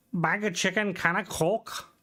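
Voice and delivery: bad, high-pitched attempt at Scouse accent. Speaker imitates how Liverpudlians talk, in a bad Liverpool accent. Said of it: "I apologize to all the Liverpudlians I offended there".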